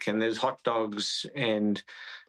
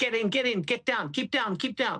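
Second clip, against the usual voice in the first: high-pitched shouting. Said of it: "somebody shouting to me".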